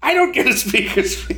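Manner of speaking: put-on, annoyed, put-out retort, pitched very high. Speaker retelling the wife's reply about the speaker's fee, mock-angry retelling. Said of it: "She got all pissed".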